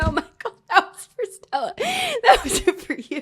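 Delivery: laughing, high squeal through laughter.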